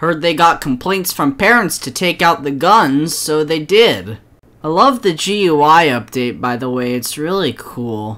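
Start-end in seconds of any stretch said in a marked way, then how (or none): 4.6-8.2 mockingly insincere, sarcastic, much lower pitch. Speaker praises the update of a knockoff game he calls a bad product: sarcastic. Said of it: "I can smell your sarcasm".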